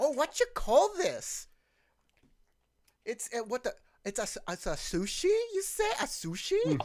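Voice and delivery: very loud put-on Minnesota accent. Acting out a tourist demon character: Minnesotan accent. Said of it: "he has a Minnesotan accent too".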